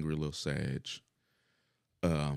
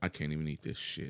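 ordinary talk

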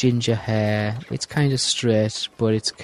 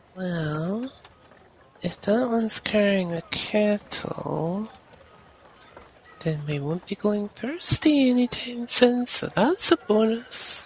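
very high, intimate half-whisper, as if leaning close; 10 semitones higher, 3 dB quieter than usual. Playing a character in a tabletop game, leaning over to half-whisper to Sabi. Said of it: "lean over to her and whisper".

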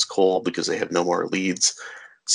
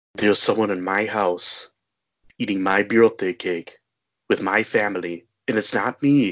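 terrible, clumsy put-on Austrian action-hero accent. Quoting a line from the movie The Sixth Day, Arnold Schwarzenegger impression. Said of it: "I have to do my terrible Arnold Schwarzenegger impersonation".

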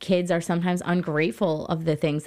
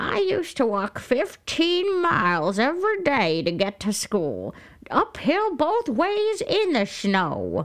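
put-on high, swooping old person voice; 8 semitones higher than usual. Quoting the stories old people always told, in an old person voice. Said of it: "that was an excellent old person voice".

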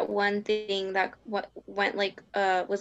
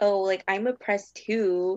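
acted, heavily exaggerated smug, self-satisfied tone. Retelling another person's claim of being oppressed: imitating a smug tone. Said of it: "they just said it with, like, this smugness".

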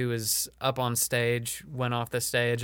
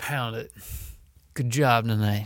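put-on older comedy club owner voice; 4 dB louder than usual. Correcting the other speaker with a better line from the club owner: Wayne impression. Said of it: "He's like".

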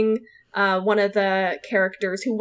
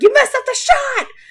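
put-on angry screaming, higher and louder; 8 dB louder than usual. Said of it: "screaming at a lighting person".

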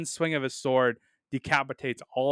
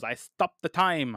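put-on French accent, slower pace. Reviewing a fight scene, quoting Hot Rod as he fires, in Hot Rod's French accent. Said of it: "in his little French accent".

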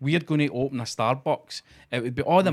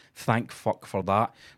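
put-on muttering under the breath, lower; 5 semitones lower than usual. Retelling what a friend in a video said: imitating someone muttering under their breath. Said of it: "kinda mutters under his breath".

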